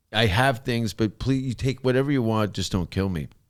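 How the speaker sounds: put-on desperate pleading voice. Retelling how a man pleaded for his life with a gangster: imitating a man pleading for his life. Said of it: "he's pleading for his life".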